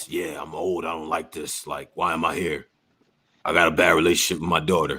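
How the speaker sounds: very low, deep, quiet, hushed tough-guy mutter. Arguing that he is the same person in every movie, do a low Liam Neeson voice. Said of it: "Low voice".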